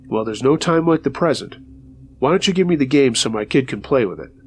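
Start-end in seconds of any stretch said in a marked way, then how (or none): none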